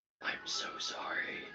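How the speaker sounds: very quiet, barely voiced whisper. Voicing a character who whispers an apology to the phone: whispering. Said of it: "whispers to the phone".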